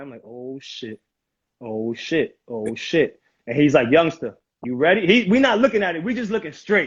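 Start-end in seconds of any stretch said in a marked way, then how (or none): 0.2-3.2 very slow, low mutter under the breath, drawn out. Speaker retells sitting next to a forty-year-old before going in, imitating muttering under breath. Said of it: "I'm saying it under my breath".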